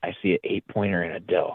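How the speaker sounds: barely-there, hushed, faint half-whisper. Retelling what the guy half-whispered to him as a kid, half-whispering. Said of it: "he whispers real slightly".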